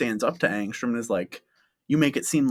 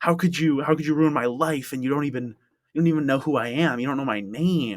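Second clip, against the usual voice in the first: mock-furious, acted-out ranting outburst; 3 semitones higher than usual. Recapping a story, retelling a character losing it at another character: mock-furious outburst. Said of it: "like loses it because he's just like".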